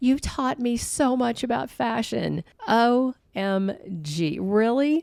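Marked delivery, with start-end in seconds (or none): 0.0-2.4 high, swoony, simpering gush. Retelling what Luna said to someone, mock-swoony, simpering Luna voice. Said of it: "in this swoony, simpering voice".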